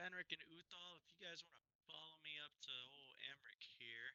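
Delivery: sounds covered, muffled. Asking two companions to follow him, muffled voice. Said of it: "Are you covering your mic right now?".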